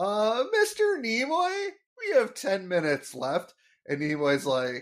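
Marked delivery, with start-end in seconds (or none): 0.0-3.5 high, squeaky adolescent voice, "Mr" drawn out long. Retelling a filmed scene, a teen in the background calls to the man reading, squeaky teen voice. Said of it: "we hear the squeaky voice teen goes".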